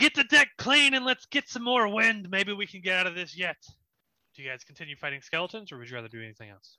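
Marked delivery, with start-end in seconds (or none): 0.0-3.6 yelling, high-pitched and loud. Voicing a captain ordering the crew as a whale ship nears: Captain Gilly yelling. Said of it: "Captain Gilly yells out".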